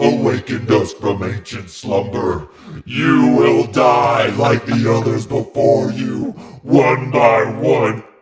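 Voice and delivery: very loud, booming, possessed demon-like voice. Retelling a scene where Cheryl is possessed and floating: possessed Cheryl voice. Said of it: "her voice goes crazy".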